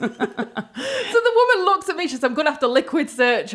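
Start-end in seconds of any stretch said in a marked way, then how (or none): none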